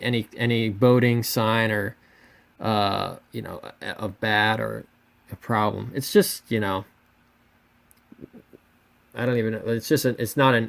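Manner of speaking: ordinary talk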